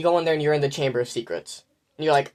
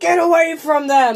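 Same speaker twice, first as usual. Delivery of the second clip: put-on boy voice yelling, higher and louder; 12 semitones higher, 7 dB louder than usual. Retelling a theme park ride, imitating Harry Potter yelling. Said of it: "you hear Harry yell".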